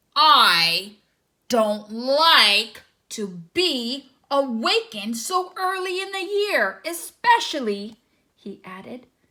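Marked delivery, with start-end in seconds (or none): 0.2-8.0 growling bear voice with drawn-out "I". Reading a children's story, the bear answers the little frog with a growl. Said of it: "he growled".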